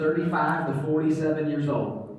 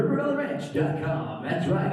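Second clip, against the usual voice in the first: put-on, animated radio advertisement announcer voice; 4 semitones higher than usual. Showing how the speaker records a camp radio ad, in a radio ad voice. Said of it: "I put the radio voice on".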